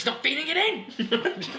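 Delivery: irate commentator shout, very high, very slow, drawn out. Playing the commentator Brian Moore, imitating him getting angry about everything. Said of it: "Get angry about everything".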